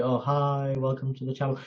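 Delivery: dull, lifeless, flat, bored monotone. Mocking vloggers who sound unexcited: imitating a bored monotone vlogger. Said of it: "Don't be".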